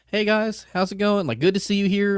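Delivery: very high, super-cordial, acted-out tone. Retelling how the prisoners greeted the group: imitating a very cordial greeting. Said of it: "being very, very cordial".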